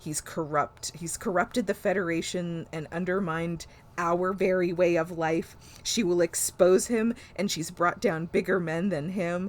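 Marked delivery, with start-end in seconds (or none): none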